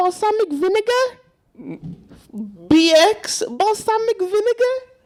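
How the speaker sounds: squeaky puppet voice, pitched way up high. Talking about the Elmo and Rocco video, the speaker does an Elmo impression. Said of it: "is this your Elmo impression?".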